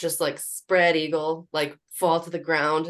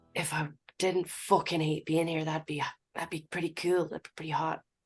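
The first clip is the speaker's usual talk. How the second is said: muttered under the breath, quieter; 6 dB quieter than usual. A player's character, saying it to whoever is nearest, muttered under breath. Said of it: "under my breath say to whoever's nearest me".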